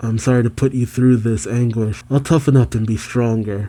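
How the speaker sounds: ordinary talk, nothing marked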